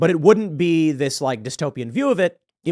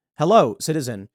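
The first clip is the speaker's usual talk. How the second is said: automated machine voice. Imagining a machine in place of a judge at court: court machine voice. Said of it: "he goes up to a machine and it's like".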